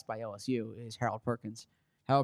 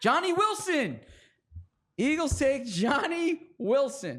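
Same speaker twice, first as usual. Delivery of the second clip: high, slow, excited delivery. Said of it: "You hear that excitement in his voice".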